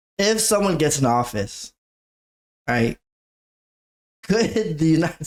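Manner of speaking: nervous laughter through the words. Asking a question the speaker calls jokey but curious, nervous laughter. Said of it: "I'm laughing. Nervous laughter".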